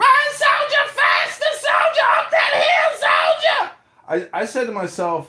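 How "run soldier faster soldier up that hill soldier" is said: shrill, very high, barked screaming. Recalling a female major on a golf cart yelling at soldiers running uphill: imitating screaming orders. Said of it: "that female major was on her golf cart screaming".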